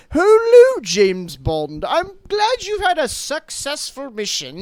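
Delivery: loud, slow, drawn-out, deliberate put-on voice with swoops. Retelling a film scene, quoting the prime minister character: imitating Margaret Thatcher. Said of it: "someone pretending to be Margaret Thatcher is like".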